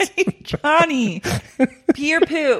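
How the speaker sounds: high, stretched-out calling voice. Trying out the airport prank line after being told to yell: mock yelling a name. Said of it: "Yell their name first".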